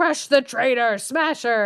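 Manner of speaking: acted-out ogress voice crying out, mild and held back. Retelling a fairy tale, the ogress orders the door: imitating the ogress crying out. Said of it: "So she starts crying out to the door".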